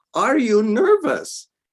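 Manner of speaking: put-on thick, strong German accent, very high pitch. Retelling a question heard backstage: strong german accent. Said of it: "Strong German accent".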